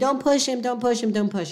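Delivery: play-acted urgent, insistent tone, repeated over and over. Describing a cliff scenario, voicing someone below yelling: imitating Spencer yelling. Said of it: "he's yelling at me".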